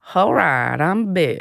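slow, easy, unhurried southern drawl. Trying the impression again, comparing it to another Southern voice: Bill Clinton impression. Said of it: "talks like Matthew McConaughey a bit".

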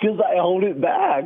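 worked-up, emotion-filled, very emotional. Answer someone asking why they are only now finding out about this, very emotional. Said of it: "emotional ben".

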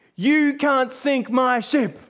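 acted-out cry, pitch flung upward and stretched long. Retelling a man in a storm defying god, retelling a shout at god. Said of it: "He's shouting out to God".

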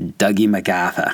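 put-on Boston accent. Taking a quick break from the history to say a name: Boston accent. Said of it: "You guys want to hear his name with a Boston accent?".

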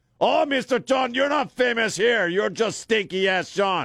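very high-pitched voice. Retelling what his wife says back to him: imitating his wife. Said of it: "That's what I hear".

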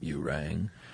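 deep vocal fry voice. Answering a mention of Lurch from the Addams Family: Lurch voice. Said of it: "you do a pretty good Lurch".

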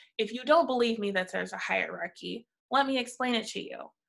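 ordinary delivery

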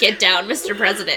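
ordinary delivery

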